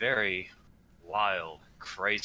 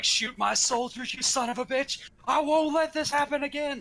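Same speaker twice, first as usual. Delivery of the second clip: very high, angry, in-character shouting; 4 dB louder than usual. Giving an example of what the character will shout in a fight: yelling in character. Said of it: "I'm gonna be yelling things like".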